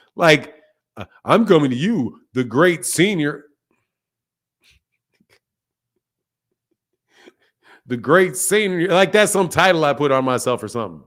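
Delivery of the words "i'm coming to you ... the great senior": mock condescending, patronizing, self-important tone. Acting out how someone talked down to the speaker, in a mock-condescending tone. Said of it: "It was a condescending tone".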